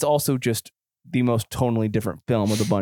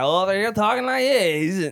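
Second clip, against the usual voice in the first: bad put-on Kazakh accent, higher pitch; 10 semitones higher than usual. Trying a Borat voice while telling a story: terrible Borat impression. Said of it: "that was a terrible Borat".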